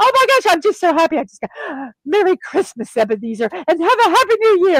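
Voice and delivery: put-on crazy happiness. Describing a character who now can make amends, acting out crazy happiness. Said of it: "just crazy happy, crazy excited".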